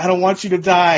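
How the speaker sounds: weeping, sobbing, tearful voice. Retelling a scene where Gohan speaks to the dying Piccolo: imitating Gohan crying. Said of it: "Gohan's crying, like".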